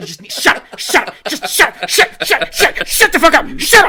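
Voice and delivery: put-on angry ranting. Ranting about Boston fans, acting like Philip Seymour Hoffman in Punch Drunk Love. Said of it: "I feel like Philip Seymour Hoffman in Punch Drunk Love".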